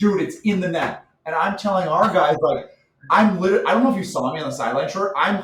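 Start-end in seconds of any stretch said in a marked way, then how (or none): 0.0-1.0 acted-out, yelling-style, half-yelled urging tone. Recounting yelling at Henry after his goal, retelling own yelling. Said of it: "And I'm yelling at him like".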